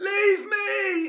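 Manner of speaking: piercing shriek, very high and very loud. Voicing a character grappled by a player: screaming. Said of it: "she screams".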